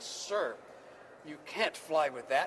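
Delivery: very stern, severe, no-nonsense official-sounding voice. Retelling the TSA agent's words to him; mock-stern. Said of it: "in a very stern voice".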